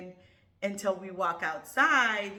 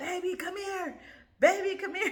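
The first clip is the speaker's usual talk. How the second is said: put-on scream, higher; 12 semitones higher than usual. Retelling how her husband called her downstairs: imitating husband screaming. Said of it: "my husband starts screaming at me".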